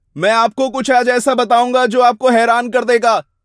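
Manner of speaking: hollow, loud, high yelling with no feeling. Showing a line just shouted with no motivation: shouted without real feeling. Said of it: "सिर्फ चिल्ला के कहूं, बिना किसी motivation के".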